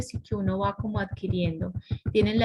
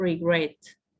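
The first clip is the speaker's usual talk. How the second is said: word regret with stress on second syllable -gret; 4 semitones lower than usual. English lesson answering David's question, stress on second syllable of regret. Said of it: "el acento va en la segunda".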